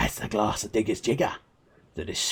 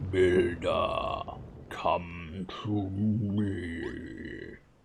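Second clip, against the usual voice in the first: eerie, low, very slow, drawn-out spooky call; 4 semitones lower, 5 dB quieter than usual. A mysterious voice calls out to the builder, Veldin, in a spooky scary voice. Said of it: "You sound scary".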